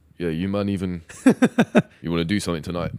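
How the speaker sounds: deliberately deepened, low put-on voice. Demonstrating a voice-note message, in a put-on deep voice. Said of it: "put on like a deep voice for these voice notes".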